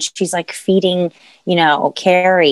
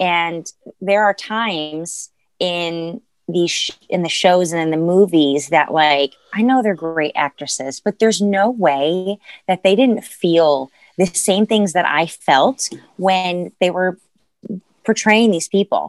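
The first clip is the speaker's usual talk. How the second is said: ordinary talk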